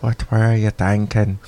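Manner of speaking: put-on, attempted Northern Irish accent. Redoing a favorite bit on request, in an attempted Northern Irish accent. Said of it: "You have to do it in a Northern Irish accent".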